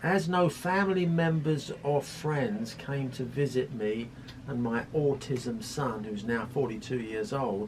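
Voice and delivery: ordinary talk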